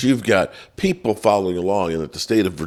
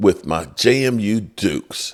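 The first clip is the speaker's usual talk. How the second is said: plain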